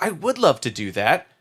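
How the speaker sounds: plain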